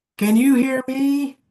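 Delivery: slow, very loud, very high, drawn-out yell. Answering another speaker who asks whether they can be heard: yelling. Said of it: "I'm, like, yelling back at you".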